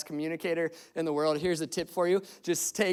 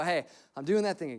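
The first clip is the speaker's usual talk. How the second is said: quick, abrupt inner-voice speech. Recalling a moment in the middle of crying, the speaker retells their own self-talk. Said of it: "I have this moment where I go".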